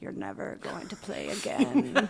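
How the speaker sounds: put-on German accent. Retelling what Pia said after the first cap: imitating Pia in a German accent. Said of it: "Was that her accent?".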